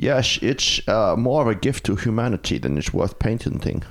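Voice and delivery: put-on Swedish accent, heavily laid on. One speaker quotes a statement from Volvo in a Swedish accent. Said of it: "in a Swedish accent".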